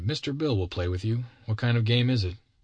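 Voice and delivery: ordinary talk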